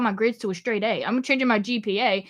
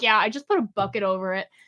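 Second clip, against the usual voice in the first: mock nonchalant, casual tone; 2 semitones lower than usual. Retelling a roommate's reply about a leaking roof: imitating a nonchalant tone. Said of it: "so nonchalant".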